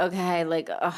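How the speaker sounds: beaten, deflated, defeated and worn-down tone. Retelling a phone call with a doctor, imitating own defeated tone. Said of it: "I just sounded defeated on the phone".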